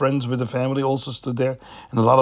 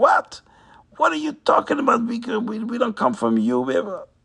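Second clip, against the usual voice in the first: put-on very high, shrill, swooping, indignant angry screaming; 11 semitones higher than usual. Retelling how the Galach answered the Rav: imitating screaming. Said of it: "He started screaming".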